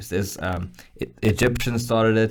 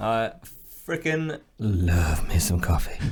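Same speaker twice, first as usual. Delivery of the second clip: smouldering, sultry, seductive delivery; 3 dB quieter than usual. Taking over the talk about coffee from a friend, sultry.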